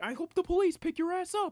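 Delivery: exaggerated voice, very high, very loud, shrill and booming.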